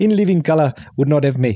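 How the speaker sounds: South African accent, tried for show. Trying out an accent never managed before, south african accent. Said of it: "I do like South African".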